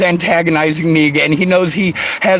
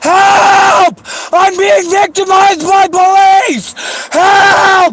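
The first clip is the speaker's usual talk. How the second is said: very high, shrill, loud scream, help drawn out; 5 dB louder than usual. In a confrontation with police, a person screams for help. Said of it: "You're screaming".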